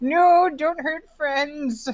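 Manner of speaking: acted, high, drawn-out yell. Tackle-hugging a gargoyle as a character and shouting: in-character yell. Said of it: "pet it as aggressively as I can and yell".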